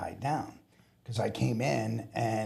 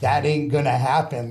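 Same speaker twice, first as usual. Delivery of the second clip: mock very loud scoffing, laughing delivery; 3 semitones higher, 9 dB louder than usual. Retelling how supervisors reacted to his request: imitating supervisors laughing at him. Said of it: "both shift supervisors start laughing at me".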